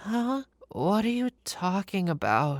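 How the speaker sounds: acted barely awake, groggy, drawn-out half-asleep mumble. Retelling the wife waking up when asked a question: imitating groggy half-asleep voice. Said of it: "in a completely groggy and half asleep voice".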